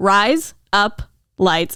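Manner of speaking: every word stretched out really slowly. Saying a phrase to the other speaker so they catch on, really slow. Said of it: "I'm saying it really slow".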